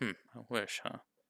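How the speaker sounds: soft, voiced mumbling under the breath. Showing how a character said it aloud on hearing a wish: muttered. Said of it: "Kinda, like, muttered it, not whispered it".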